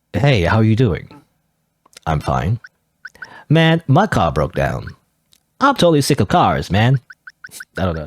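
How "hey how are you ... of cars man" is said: put-on American West cowboy accent. Voicing a cowboy customer in a game: put-on cowboy accent. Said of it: "how do you do a cowboy accent?".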